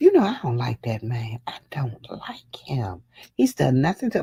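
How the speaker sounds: speaking in a whisper. Talking about people the speaker dislikes, whispering. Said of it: "why am I whispering?".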